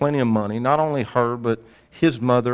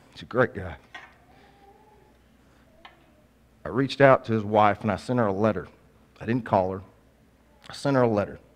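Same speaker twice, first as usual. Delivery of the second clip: emotional, choked up, voice catching on words; 2 semitones lower, 4 dB quieter than usual. Speaker talking about a customer who died in an accident, choked up. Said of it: "I'm getting choked up now".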